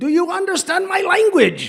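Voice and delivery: put-on enthusiastic teacher voice. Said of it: "speaking very enthusiastically and loudly".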